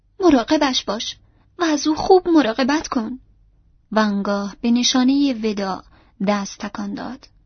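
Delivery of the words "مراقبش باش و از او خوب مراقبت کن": high, tear-choked shout with lump in throat. A farewell call to the coach guard, shouted while choked with tears. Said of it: "بسی با بغض به محافظ کالسکه فریاد زد".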